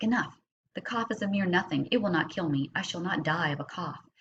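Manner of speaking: ordinary talk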